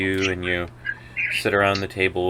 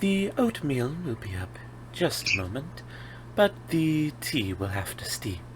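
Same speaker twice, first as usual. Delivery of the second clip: put-on very hushed, very soft old voice; 6 semitones higher, 10 dB quieter than usual. As the narrator, voice the barkeep taking the party's order: older dark elven barkeep voice. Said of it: "a older, uh, dark elven woman, / a older, uh, dark elven woman, she looks up with a smile. / uh, dark elven woman, / a older, / As you go up to the barkeep".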